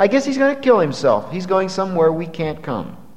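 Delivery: facetious, sarcastic, mocking delivery. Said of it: "in a facetious tone of voice".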